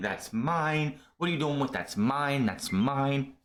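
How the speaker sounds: mild, held-back, half-screamed outburst. Recapping a wrestling show, acting out Asuka coming out, imitating her screaming. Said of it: "She's screaming".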